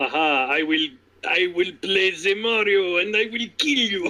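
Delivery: very slow, drawn-out, put-on Russian accent. Imitating a wrestler who says he is a gamer: attempted russian accent. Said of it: "I was trying to go for a Russian".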